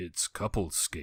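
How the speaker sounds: calling like an announcer. Retelling rink memories, doing a Mister Carter impression. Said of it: "this was my impression of Mister Carter".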